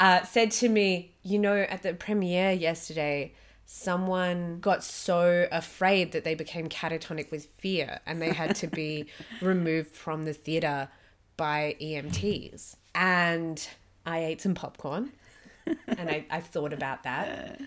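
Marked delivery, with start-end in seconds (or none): 1.2-17.6 mock grave, dead-serious, convincing voice. Retelling what someone said at the theater: imitating Lee's very serious voice. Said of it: "in probably the most convincing and serious voice ever".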